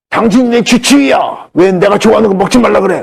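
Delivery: high-pitched monstrous voice. Recounting a cancer patient's reply to the speaker's advice, monster voice. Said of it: "괴물 목소리로".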